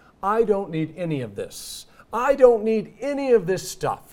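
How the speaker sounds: mock grand announcer voice, loud and high. Speaker quotes what a man declared: retelling a loud announcement. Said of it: "he announces loudly".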